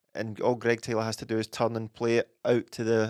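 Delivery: plain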